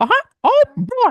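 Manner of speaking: very high, slow, drawn-out cartoon voice. Showing how he does his Mickey voice: Mickey Mouse voice. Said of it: "I know right away like how to do my Mickey voice, which is".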